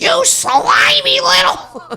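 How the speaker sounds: very high, heavily nasal voice. In a movie phone call, a woman answers a man before hanging up, in a really nasally Fran Drescher voice.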